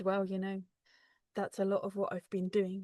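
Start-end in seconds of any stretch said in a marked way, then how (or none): none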